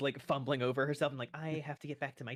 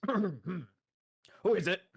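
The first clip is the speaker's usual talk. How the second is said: rough, gruff, called-out voice; 4 semitones higher, 4 dB louder than usual. Storyteller voicing someone answering a knock at the door: gruff voice. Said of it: "you hear a kind of gruff voice".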